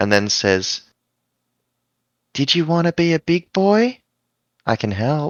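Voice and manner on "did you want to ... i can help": whisper, higher and slower. Narrating to the players, a woman whispers into a character's ear, whisper. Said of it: "she whispers into your ear".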